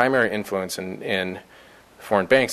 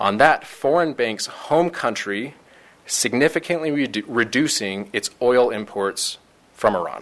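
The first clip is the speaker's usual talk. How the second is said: very slow, deliberate, word-by-word delivery; 3 semitones higher than usual. A speaker explains a complicated provision, saying it very slowly. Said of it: "I'm going to say this very slowly".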